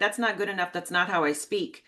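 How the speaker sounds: usual speaking voice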